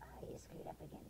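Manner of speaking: harsh, critical, whispered voice.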